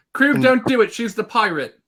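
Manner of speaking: high-pitched shouting voice. Speaking in character to krug, yelling. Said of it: "Robin yelling".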